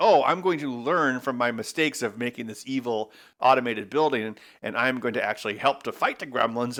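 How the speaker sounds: ordinary delivery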